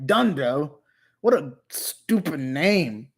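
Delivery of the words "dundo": word pronounced with an American accent. Speaker repeats the name the American way: American-accented 'Dundo'. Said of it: "let me say it in an American way".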